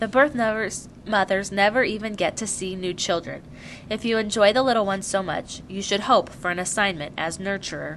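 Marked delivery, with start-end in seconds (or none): none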